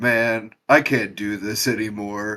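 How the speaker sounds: slow, expressionless deadpan delivery. Retelling a favorite moment from the show: imitating a deadpan delivery. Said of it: "just with the deadpan voice".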